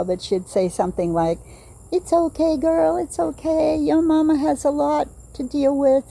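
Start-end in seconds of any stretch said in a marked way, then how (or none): 1.9-6.1 high, gentle, comforting voice. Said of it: "I don't wanna make the accent 'cause I don't know how".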